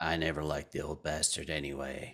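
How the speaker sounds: slightly gravelly voice. Narrator voicing a voice that speaks out of thin air to the group, a little bit gravelly. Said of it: "kind of a little bit gravelly".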